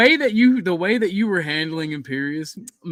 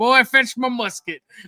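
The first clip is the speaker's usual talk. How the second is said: put-on grumpy old man voice, higher; 5 semitones higher than usual. Retelling what Chuck says about drugs: Chuck in grumpy old man mode. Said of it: "he goes into grumpy old man mode".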